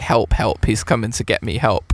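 plain

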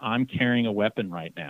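ordinary talk

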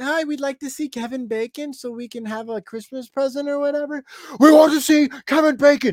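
very high, small, feeble, squeaky mouse voice. Acting out characters from something being discussed, in a small, weak mouse voice. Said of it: "Your voice is so small and weak like a mouse".

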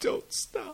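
whispered, crying, pleading tone. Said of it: "and he starts crying".

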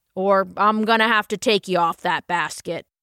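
gentle but firm, strong, deep, steady voice. Narrator reading a buck rabbit father warning a cat on a basket, strong deep voice. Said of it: "a full-grown buck rabbit was altogether different. ... said a strong, deep voice".

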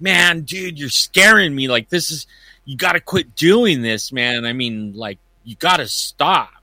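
rattled, insistent, agitated acted yelling. Retelling how someone he startled yelled at him: imitating someone yelling. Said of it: "he started yelling at me".

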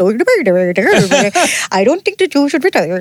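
put-on Nordic-style Scandinavian accent. Quoting a Swedish chef's reaction to retiring, put-on Scandinavian accent. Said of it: "in their beautiful Scandinavian accents".

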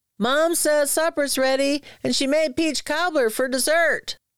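very high-pitched shouting. A boy knocks on his uncle's trailer door to call him to supper, yelled. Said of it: "He knocked on the door and yelled".

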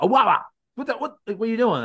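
very high-pitched, alarmed wrestler-style yell. Retelling a wrestler yelling at another wrestler after being speared: imitating Solo yelling.

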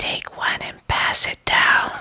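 slow, close, breathy whisper right at the ear. Retelling a friend leaning into an ear at a movie: imitating Nick's ASMR whisper. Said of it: "he whispers, I'm gonna A S M R this".

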